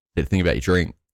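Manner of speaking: plain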